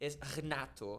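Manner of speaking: hard, harsh European Portuguese pronunciation. Saying his name the Portuguese way, before the Brazilian way: harsh European Portuguese pronunciation. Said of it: "we are way more harsh".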